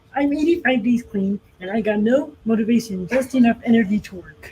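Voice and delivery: frog puppet voice. Taking turns doing impressions, trying a better Kermit the Frog impression. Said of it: "better Kermit the Frog impression".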